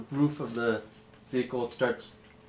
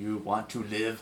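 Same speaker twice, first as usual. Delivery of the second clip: slow, soft, dead-level, expressionless monotone; 3 semitones lower, 5 dB quieter than usual. Retelling what a man said when he walked in, very monotone delivery. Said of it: "Like very monotone".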